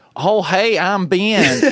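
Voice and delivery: mocking, high, very slow Southern drawl. Retelling how coworkers mimic them: imitating coworkers' mock Southern accent. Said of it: "when they try to mimic me".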